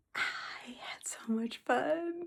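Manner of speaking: slow, soft, happy confiding whisper.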